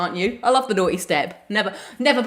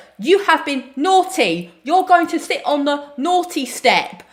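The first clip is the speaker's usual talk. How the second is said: put-on Cockney accent, pitched up; 7 semitones higher than usual. Speaker retelling a drunk woman at a bar doing her accent: Cockney accent. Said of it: "that's my Cockney accent".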